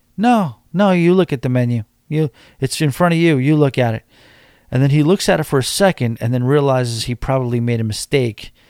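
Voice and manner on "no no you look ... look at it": curt, sassy, snippy tone with attitude. Retelling a woman's reply to her husband at dinner: imitating someone with attitude. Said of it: "a little bit of an attitude".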